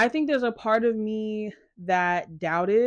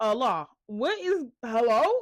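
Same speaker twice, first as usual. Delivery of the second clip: exasperated, disbelieving tone. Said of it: "And I was like".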